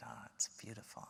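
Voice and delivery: soft, quick, hushed whisper.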